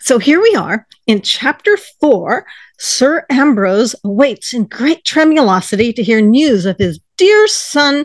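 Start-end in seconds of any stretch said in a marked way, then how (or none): 2.8-8.0 put-on, attempted American accent. Reading chapter 4 of a story aloud in an attempted American accent. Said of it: "I'm attempting the charming American accent".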